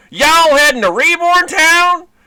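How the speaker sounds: very high, loud, hammy fake Southern American accent. Dealing with Pokemon, the speaker does a terrible Southern American accent. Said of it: "that's me doing terrible, you know, Southern".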